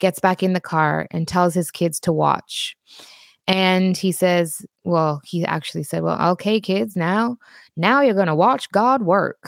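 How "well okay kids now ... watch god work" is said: put-on American accent in a man's voice. Retelling what a father told his kids in the car, in a put-on American accent. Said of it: "in his american accent".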